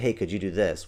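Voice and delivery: ordinary talk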